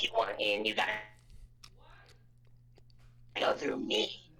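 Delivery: put-on voice of an old woman smoker. Taking up an invitation to voice act an old woman smoker, voicing her. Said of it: "If you if you want to voice act her".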